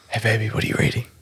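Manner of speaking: soft, hushed whisper. Role playing a chat-up line to a reader in a library: whispering. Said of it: "so you have to whisper it".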